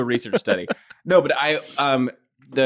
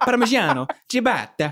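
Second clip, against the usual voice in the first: put-on Italian pronunciation, higher pitched; 9 semitones higher than usual. Joking about food words, saying it like Giada De Laurentiis. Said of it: "like Giada De Laurentiis when she says".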